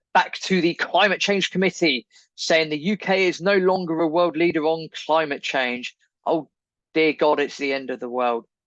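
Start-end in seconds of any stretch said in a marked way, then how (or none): 6.3-8.5 plainly sarcastic, mock alarm and doom-laden despair. A podcast host reacting to a report on uk climate leadership, sarcastic.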